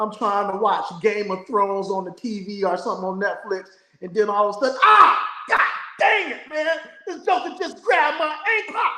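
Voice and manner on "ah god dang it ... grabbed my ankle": put-on very high, loud, drawn-out cry of pain. Asking about a dog grabbing an ankle, acting out the moment: mock pained outburst. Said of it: "I like how you said "ow,"".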